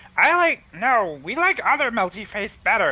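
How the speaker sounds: very high-pitched, squeaky kobold creature voice. Voicing a kobold who prefers the other melty face: kobold voice. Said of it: "the kobold looks at him and says".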